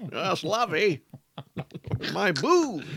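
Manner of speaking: put-on posh, haughty accent. Co-host picks up Adam's bit; Thurston Howell III voice. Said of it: "you're really good at this voice".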